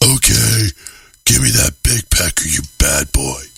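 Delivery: low, very deep put-on woman's voice. Imitating a woman from a news photo: imitating a woman's deep voice. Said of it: "She got, like, a deep-ass voice".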